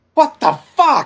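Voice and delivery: very high, very loud, shrill, baffled shriek. Voicing a baffled character looking into a sinkhole: scream.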